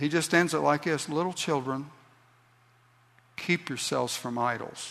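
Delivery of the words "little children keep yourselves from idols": soft voice, much quieter. Quoting the epistle's closing words as the writer would say them: said softly. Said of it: "he says it so softly".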